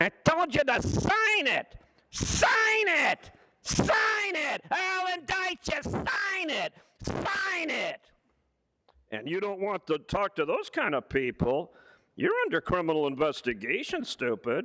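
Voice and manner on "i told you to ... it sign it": put-on, very shrill, very high, very slow drawn-out yelling. Imitating people sent to force a signature: imitating someone yelling demands. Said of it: "they're gonna talk like this".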